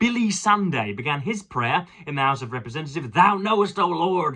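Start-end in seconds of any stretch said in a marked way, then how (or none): 3.1-4.4 acted, exaggerated American accent. Quoting a prayer begun in the House of Representatives: stereotypical American accent. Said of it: "I'm going to do a, something of a um, uh, stereotypical American accent here".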